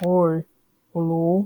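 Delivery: voice dropped low and deep. Ranking FNAF characters, quoting Nightmare BB's voice lines, Nightmare BB deep voice. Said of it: "I really like his deep voice".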